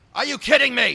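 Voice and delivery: very high loud voice. Repeating a line on purpose after another speaker names whose voice it sounded like: imitating William Haney. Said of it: "you sounded just like William Haney then".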